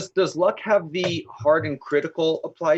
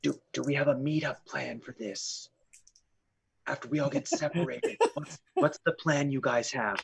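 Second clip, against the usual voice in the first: low, soft, hushed stage half-whisper; 3 semitones lower, 9 dB quieter than usual. Following Joan in the game and asking her the plan; half-whispering. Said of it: "I'm whispering to her".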